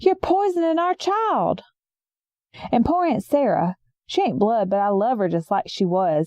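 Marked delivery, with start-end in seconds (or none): 0.0-1.6 mock shouted outburst, high-pitched. Retelling the uncle shouting again at the family: imitating someone shouting. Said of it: "he shouted out again".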